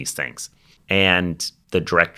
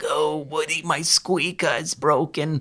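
high, pitched-up little penguin voice; 9 semitones higher than usual. Describing a voice actor's roles, the speaker quotes a penguin: Wheezy the penguin voice. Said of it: "penguin in Toy Story 2. You know, he's like".

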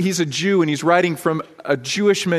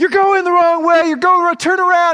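mock frantic, very high, loud screaming; 12 semitones higher, 5 dB louder than usual. Describing parents along the sideline of a kids' game, imitating parents screaming. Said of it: "they're just screaming and screaming".

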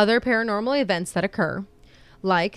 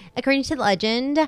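grating, really obnoxious put-on voice; 4 semitones higher than usual. Starting to tell a legend, opening words in a really obnoxious voice. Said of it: "I'm going to say this in a really obnoxious voice".

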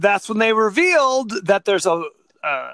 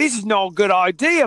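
rough, put-on attempt at an Australian accent. Retelling what the heroine Erin from Australia said: put-on Australian accent. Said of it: "I don't know if that's a good Australian accent".

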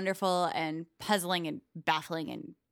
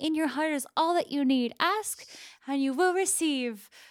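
silly, high, put-on fairy godmother voice; 7 semitones higher, 4 dB louder than usual. Quoting a stupid platitude, in a fairy godmother voice. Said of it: "You sound like a fairy godmother as you say it".

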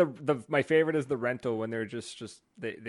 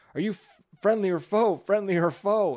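put-on shouting, loud and high; 8 semitones higher, 5 dB louder than usual. Retelling how a twelve-year-old opponent kept calling to them: imitating someone yelling. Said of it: "he kept yelling at us, like".

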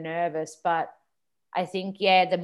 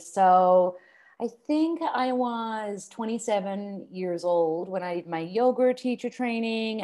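casual, fake put-on American accent; 4 semitones higher than usual. Asked to describe yoga teacher training in an American accent: put-on American accent. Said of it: "ask me a question and I'll answer it in an American accent".

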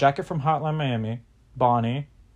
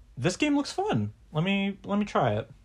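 much higher, eager put-on voice. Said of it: "I was like".

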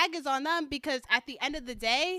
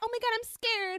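put-on crybaby voice, high, teary, words through tears; 9 semitones higher than usual. Retelling how a girl reacted when confronted: mock crying while quoting someone. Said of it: "She'd go cry".

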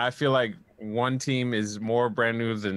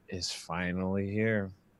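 soft, passive-aggressive tone, loaded with attitude; 3 semitones lower, 6 dB quieter than usual. Retelling what an upset woman said, mock passive-aggressive tone. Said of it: "with the most like passive aggressive tone of all time".

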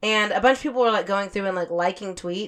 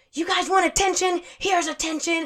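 high-pitched screaming rant; 8 semitones higher than usual. Retelling a woman screaming into her camera while driving: retelling someone screaming. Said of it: "she's driving and screaming".

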